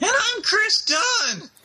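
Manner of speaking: very high, very slow, drawn-out, deliberate delivery. Introducing the podcast while imitating an absent co-host: imitating Chris. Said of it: "that was spot on".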